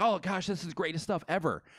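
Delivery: high-pitched, gushing commenter voice. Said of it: "They'll be like".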